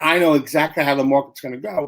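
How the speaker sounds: plain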